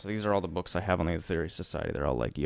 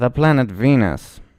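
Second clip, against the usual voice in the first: put-on odd Indian accent, higher and louder; 6 semitones higher, 16 dB louder than usual. Retelling a channeled interview, answering the questioner: imitating Doctor King's weird Indian accent. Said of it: "weird Indian accent".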